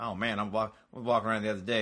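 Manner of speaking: put-on chatty, talkative Southern American accent. Imitating a Southern guy who narrates his game: imitating a Southern guy. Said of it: "Southern guy".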